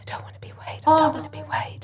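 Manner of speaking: hushed, breathy whisper, barely voiced. Retelling standing at the front of the class, whispering to her back then. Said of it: "I whispered to her".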